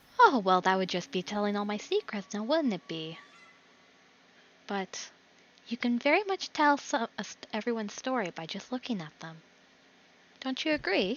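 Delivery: put-on innocent, wide-eyed, childlike tone. Voicing a character who smiles and deflects a question: childish, wide-eyed manner. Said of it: "wide open, like, childish demeanor to her throughout".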